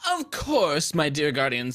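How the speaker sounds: lively, swooping, animated, sing-song character voice. Voicing a character greeting two guardians after taking off her hat: voicing Mara. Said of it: "Mara will step forward ... and say".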